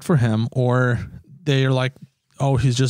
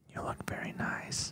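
slow, hushed whisper, close to the ear. Retelling someone leaning to a girl's ear: imitating Joe Biden whispering. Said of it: "he comes up to the ear and he's like".

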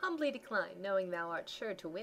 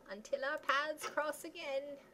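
put-on aged, elderly old man voice, pitched up; 7 semitones higher than usual. Voicing a druid character's farewell for a listener: old voice. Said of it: "You like my old voice there".

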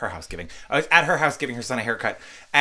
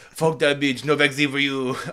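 poorly done put-on tough-guy voice; 2 semitones higher than usual. Joking about who qualifies for the vaccine: bad Arnold Schwarzenegger impression. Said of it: "I can't do an Arnold Schwarzenegger impression".

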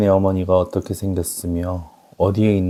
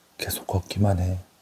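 hushed whisper, quieter; 6 dB quieter than usual. The narrator, frightened by a leering soldier, speaks to Hassan, whispering. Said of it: "나는 핫산에게 속삭였다".

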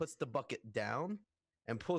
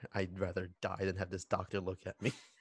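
low, grumbling mutter, as if to oneself; 6 semitones lower than usual. Walking off toward the med bay, muttering in character: muttering. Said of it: "I just mutter".

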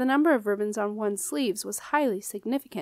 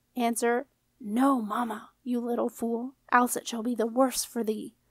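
low hiss under the breath. Queen Ethelduda warns Jenna at the table, hissed under her breath. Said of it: "she hissed under her breath".

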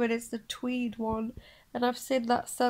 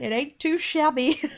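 mock London accent, higher and louder; 3 semitones higher, 5 dB louder than usual. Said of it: "in a London".

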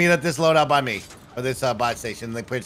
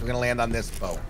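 normal talking voice

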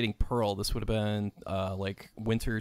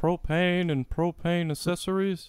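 burly cartoon dad voice, Texan accent, pitched up; 8 semitones higher than usual. Told he sounds like Hank Hill with his wife, a speaker answers with a Hank Hill impression. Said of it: "you sound like Hank Hill".

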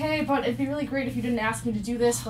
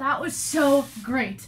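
plainly sarcastic tone; 2 semitones higher than usual. Proving to the other speaker they are great at sarcasm, sarcastic. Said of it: "I'm great at sarcasm. Watch".

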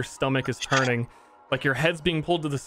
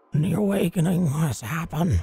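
whispered in an acted character voice; 3 semitones higher than usual. Voicing a head in a pile that whispers into a player's ear: whispering in character. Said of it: "a head peers out from inside the pile and whispers into your ear".

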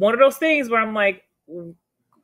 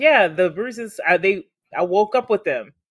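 ordinary talk

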